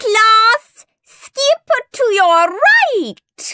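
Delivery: shrill, very high-pitched bellowing. Narrating a teacher giving orders to her class: bellowing. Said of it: "When Miss Tutu bellowed".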